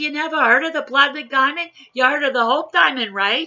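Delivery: put-on loud, high-pitched New Jersey accent. Telling a joke, voicing a woman on an airplane: jersey accent. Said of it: "some jokes are just made to be told with a Jersey accent".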